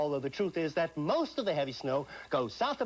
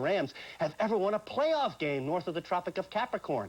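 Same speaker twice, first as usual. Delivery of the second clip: usual speaking voice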